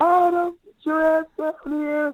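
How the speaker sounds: acted-out raw shrieking, very high, shrill scream. Retelling how someone calls Adam down to play: imitating someone screaming. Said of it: "he just screams".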